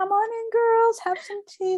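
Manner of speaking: sweet, warm, very high voice. Speaker imitates the listener's mom welcoming the girls in: imitating a warm, inviting mom. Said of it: "Like she just feels like so warm and inviting".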